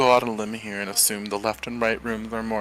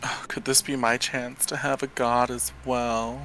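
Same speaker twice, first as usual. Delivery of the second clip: snide, sarcastic, tongue-in-cheek mocking tone; 2 semitones higher than usual. Speaking in character to the group of players: sarcastic. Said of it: "I say, like, sarcastically".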